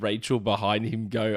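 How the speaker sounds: normal talking voice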